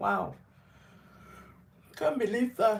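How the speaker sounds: speaking through a yawn. Greeting everyone late in the day, speaker talks while yawning. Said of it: "Sorry, I'm yawning".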